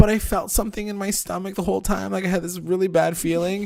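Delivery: acted bawling, weepy, crying through every word. Retelling what she said, imitating someone crying. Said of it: "your impression was so good".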